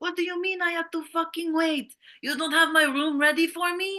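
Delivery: very high, acted-out yelling. Recounting a man at a hotel check-in, retelling a yell at a manager. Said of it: "when he was yelling at the manager".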